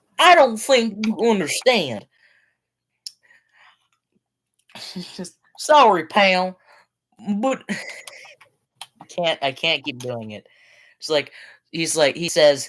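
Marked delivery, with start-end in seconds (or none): 0.2-10.5 put-on drawn-out strange Western accent. Retelling how Lucas talks on the phone: Lucas's weird Western accent. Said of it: "like a weird, like Western accent".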